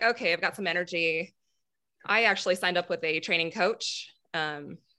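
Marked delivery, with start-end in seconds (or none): none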